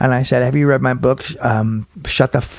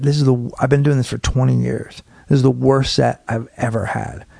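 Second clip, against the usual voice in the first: plain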